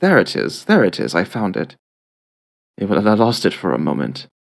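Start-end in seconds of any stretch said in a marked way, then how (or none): 0.0-1.8 put-on British-accented voice. Finding the character's voice again: British accent. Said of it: "a bit of a British accent".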